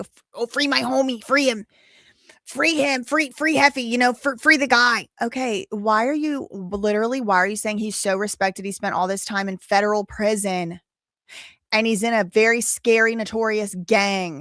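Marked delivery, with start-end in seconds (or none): 0.0-5.1 sneering, mocking, pitched-up, stammering pleading voice. Mocking people who call for their friend's release: mocking imitation of a supporter. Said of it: "trying to act like".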